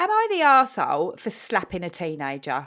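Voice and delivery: loud, sing-song put-on Essex accent. Reading a post aloud after the other speaker suggests Essex: Essex accent. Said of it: "I could do Essex".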